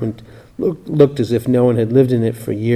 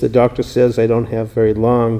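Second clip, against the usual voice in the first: plain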